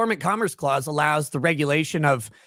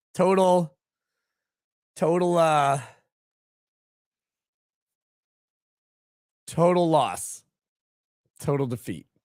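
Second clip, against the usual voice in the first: sounding defeated and dejected. Opening the show and admitting being late, sounding defeated. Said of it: "if I sound defeated, it's because I am".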